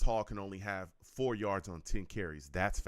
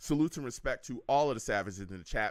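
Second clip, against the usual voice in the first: ordinary delivery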